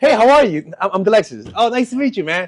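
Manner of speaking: overeager, keen tone. Acting out how he used to introduce himself to new people, mock-enthusiastic greeting. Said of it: "That that's me enthusiastic".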